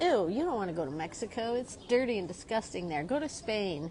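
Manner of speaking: normal talking voice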